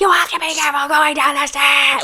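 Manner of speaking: wild, unhinged, high crazed cry. Retelling their own voice screamed back on the stairs: imitating a crazy screaming voice. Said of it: "this crazy voice".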